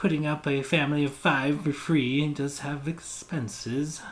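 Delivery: plain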